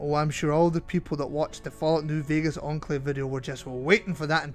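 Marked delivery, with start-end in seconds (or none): none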